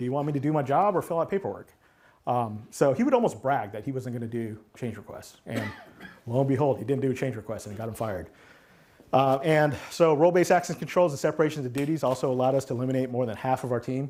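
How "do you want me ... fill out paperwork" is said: dismissive, defiant, bragging, griping tone. Retelling a coworker's complaint about change requests: imitating a coworker saying it loudly. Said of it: "he would say it very loudly".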